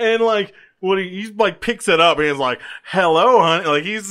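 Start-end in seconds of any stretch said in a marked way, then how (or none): 2.8-3.7 play-acted, needling, teasing, taunting tone. Retelling a scene where a character answers the phone: imitating a teasing tone. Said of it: "he's just, like, teasing him".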